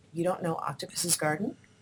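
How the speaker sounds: soft, toneless, innocent-sounding delivery.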